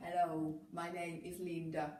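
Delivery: slow fake robot voice. Describing the voices in an app, imitating one: robotic Linda app voice.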